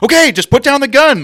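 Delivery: sudden very loud, very high-pitched aggressive yell. Retelling how a friend shouts out of nowhere at bowling: imitating Kyle shouting aggressively. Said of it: "shouts a lot, very aggressive tone".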